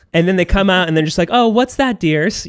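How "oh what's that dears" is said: sweet, pitched-up showbiz stage voice. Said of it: "she course corrects".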